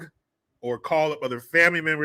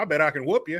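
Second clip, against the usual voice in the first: thick, heavy put-on country accent. Retelling a prank call bit: imitating Roy D. Mercer's country accent. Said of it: "country dude, thick-ass accent".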